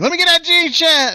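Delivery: high, loud hollering. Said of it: "he's hollering at girls and be like".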